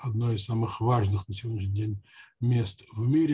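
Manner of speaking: ordinary talk, nothing marked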